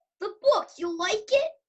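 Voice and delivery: put-on read-aloud Boston accent. Reading a script scene aloud for fun, in a Boston accent. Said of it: "read it with the Boston accent".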